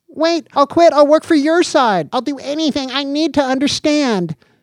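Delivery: put-on very high, childlike, frantic pleading. Danny begs as the figure on the screens says goodbye: pleading madly, like a child. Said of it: "Danny pleaded madly, like a child".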